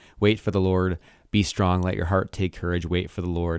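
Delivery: ordinary delivery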